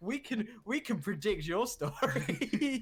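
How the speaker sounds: high, drawn-out sassy fake excitement. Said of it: "sorry for the sass".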